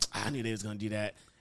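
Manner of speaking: mock-bitter grumble. Teasing the other person about their after-movie reactions, imitating a bitter tone. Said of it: "you sound a bit bitter".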